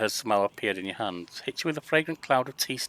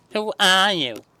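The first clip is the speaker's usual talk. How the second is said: very high, shrill, obnoxious taunting voice; 9 semitones higher, 9 dB louder than usual. Game narrator voicing a fake halfling mimicking the listener's question: obnoxious mocking voice. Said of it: "mimicking you in an obnoxious voice".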